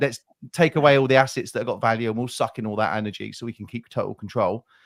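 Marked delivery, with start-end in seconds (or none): none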